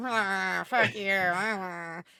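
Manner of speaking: acted rude, drunk voice. Voicing a drunk character being rude: imitating a rude drunk. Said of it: "he's all drunk, and he's like".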